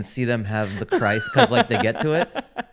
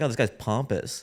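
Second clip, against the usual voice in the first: ordinary talk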